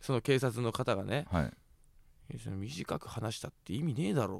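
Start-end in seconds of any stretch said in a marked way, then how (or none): 2.4-4.4 barely audible, very quiet, low muttered tone. Retelling a retort in an exchange involving the police, barely audible mutter. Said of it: "聞こえるか聞こえないかぐらいの声で".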